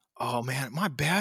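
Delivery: put-on dumb, mock-innocent, feigned-ignorance tone. Retelling how the speaker reacted at a dinner, retelling playing dumb. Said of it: "I totally just played dumb".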